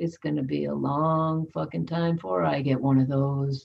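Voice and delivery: quiet low mutter. Retelling a remark made while picking up a pocketbook, said quietly like Eeyore. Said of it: "I said really quietly".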